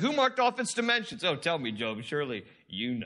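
put-on taunting sarcasm with swooping pitch. Acting out God questioning Job in the Bible: mock-sarcastic. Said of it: "God is being sarcastic. There's some sarcasm here that he's giving to Job. He's like".

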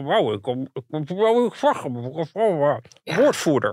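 loud mumble through a stuffed mouth. Imitating a politician dodging the press with food: imitating talking with a full mouth. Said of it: "Je propt wat, wat voedsel naar binnen en dan zeg je".

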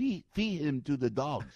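high-pitched put-on North Korean accent. Joking about North Korea: Kim Jong-un impression. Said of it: "it's like if I did a Kim Jong-un impression".

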